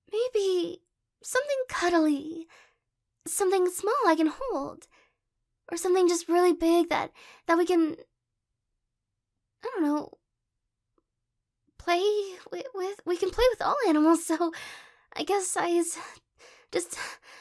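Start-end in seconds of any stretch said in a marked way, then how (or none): 5.7-17.0 flustered, anxious run-on babble, trailing off. Talking to the person they want to marry about pets, flustered, freaking out. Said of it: "now I'm freaking out".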